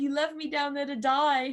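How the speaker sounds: put-on adorable Australian accent. Quoting what a crewmate said to the speaker, in an australian accent. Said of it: "in his his adorable Aussie accent".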